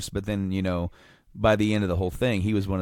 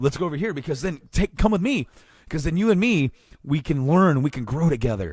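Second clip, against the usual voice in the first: squeaky, high puppet-frog voice; 7 semitones higher than usual. Acting out Ben trying to reach out to her, in an almost Kermit the Frog voice. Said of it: "I almost sounded like Kermit the Frog there".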